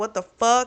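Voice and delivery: put-on furious scream. Retelling how she confronted the people at their office, imitating someone screaming. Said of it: "screams at them and is like".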